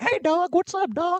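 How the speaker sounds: very high voice, pitched way up.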